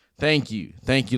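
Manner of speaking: acted-out sincere, heartfelt delivery in an American manner. Showing how a heartfelt thank-you should sound: heartfelt American thank-you. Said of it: "like that, like an American".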